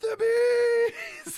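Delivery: high, slow, hammy anguished howling movie-style wail.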